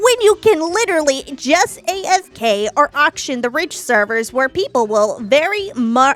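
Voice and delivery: nerdy, big-brain know-it-all voice. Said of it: "I'm gonna do the nerd voice".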